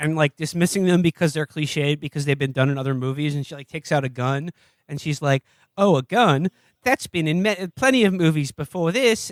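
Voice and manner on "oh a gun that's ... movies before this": slow put-on Australian accent. Retelling a movie character's line as she takes out a gun, Australian accent. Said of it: "I'm doing an Australian accent now".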